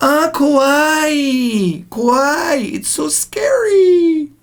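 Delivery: high, slow gushing voice, kawaii mispronounced as kowai.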